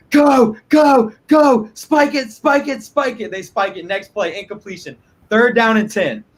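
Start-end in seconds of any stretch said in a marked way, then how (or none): 0.1-3.3 put-on, high, drawn-out, screaming yell. Recounting watching a football game on TV: retelling screaming at the TV. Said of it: "I'm screaming at the T V".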